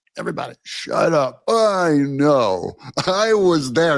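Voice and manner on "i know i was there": put-on know-it-all host voice. Mocking the host's claim to have been there: imitating Joe Scarborough. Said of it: "I wanna start talking that way".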